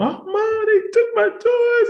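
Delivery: mock crying. Retelling coming home after bullies took toys: imitating own past crying. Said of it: "I'm boo-hooing".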